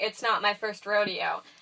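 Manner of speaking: ordinary delivery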